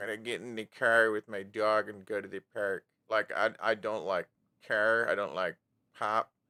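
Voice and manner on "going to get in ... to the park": imitated, nasal Midwestern Michigan accent. Asked about accents she can't stand, the speaker demonstrates a Michigan accent. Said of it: "specifically like Michigan".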